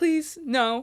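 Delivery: mock mortified, high, embarrassed begging plea. Retelling own teenage reaction to mom chatting with Kat: imitating embarrassed pleading. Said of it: "when you're a teenager and, like, embarrassed".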